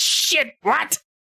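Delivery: very high, panicked, alarmed cry. Voicing an enemy whose cloak catches fire: panicked shouting.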